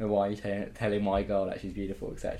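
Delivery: ordinary talk, nothing marked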